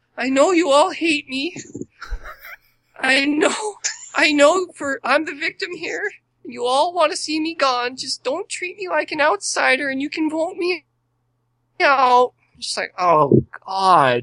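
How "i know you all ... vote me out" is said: snarky, mocking, high-pitched voice with attitude. Retelling what a woman said when she came in to the group, imitating her speech. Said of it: "She comes in and says".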